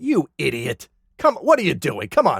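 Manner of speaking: acted, petty, exasperated, mildly irritated tone. Retelling how Janakris scolds Goban after a failed attack: imitating Janakris, annoyed like over spilled coffee. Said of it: "responds to him like he just spilled a mug of coffee".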